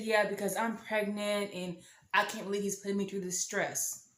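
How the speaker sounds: ordinary delivery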